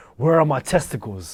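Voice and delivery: put-on angry dog voice. Retelling a cartoon scene where a dog confronts the main characters: imitating an angry dog. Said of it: "And he was just so angry".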